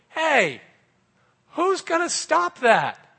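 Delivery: squeaky voice, very high and loud. Retelling the giant mocking God's people and little Dave answering, in a squeaky voice. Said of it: "in his squeaky voice".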